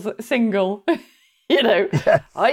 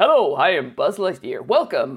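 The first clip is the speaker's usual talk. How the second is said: put-on American voice, lower; 6 semitones lower than usual. Comparing Disney parks, speaker imitates Buzz Lightyear's US greeting in a very American voice. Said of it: "it's all very, very American".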